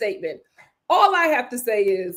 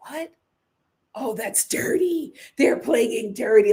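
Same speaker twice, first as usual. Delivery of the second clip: acted exclamation full of disgust. Retelling how the losing team reacted: imitating disgust. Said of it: "the losing team was disgusted".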